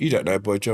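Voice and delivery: play-acted smug, cocky, cocksure tone. Retelling what the bouncer's mate said: imitating a cocky bouncer. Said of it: "bit cocky".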